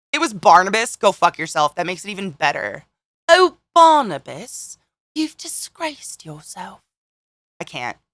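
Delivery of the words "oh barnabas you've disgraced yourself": put-on British accent, lofty, high and drawn out. Speaker quoting a line addressed to barnabas, in a british accent. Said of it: "That's so beautiful and British".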